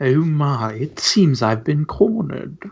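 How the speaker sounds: put-on, very posh, upper-crust British accent. Game master voicing the Blue Ghost to the players, in a posh British accent. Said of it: "starts speaking in a very posh British accent".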